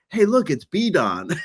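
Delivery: acted whisper. Retelling whispering to a companion at the movies: retelling a whisper. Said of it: "and I whispered to Cougs".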